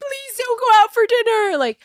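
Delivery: mock shrill, very high, sobbing, hysterical crying voice. Telling about going out to dinner, the speaker mimics her son begging her, imitating hysterical crying. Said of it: "hysterical crying, being like".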